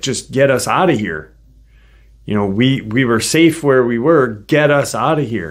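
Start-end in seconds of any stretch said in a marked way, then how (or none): none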